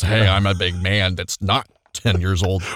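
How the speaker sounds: put-on child voice faking a deep grown-man voice. Showing how they tried to talk when making a profile: put-on man voice, sounds childish. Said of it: "But you still sound like a child".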